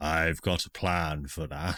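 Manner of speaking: voice from the sky. Acting out what players will hear: voice from the sky. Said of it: "a voice from the sky sort of just go".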